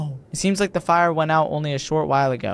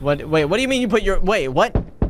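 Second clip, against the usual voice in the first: usual speaking voice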